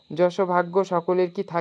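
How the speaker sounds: plain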